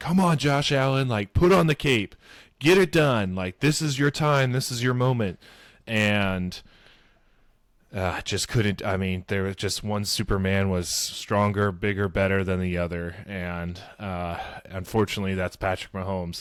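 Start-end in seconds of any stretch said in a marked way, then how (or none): 0.0-5.4 loud, pleading yell, pitched up. Retelling yelling at the tv during the second half: imitating own screaming at tv. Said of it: "I kept on screaming at the T V".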